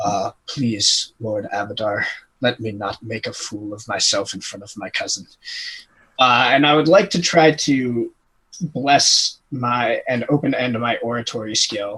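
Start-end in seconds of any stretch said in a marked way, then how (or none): 0.0-5.2 murmured, hushed pleading half-whisper under the breath. Voicing a character praying before the queen: half-whispered prayer under breath. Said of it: "whispers under his breath".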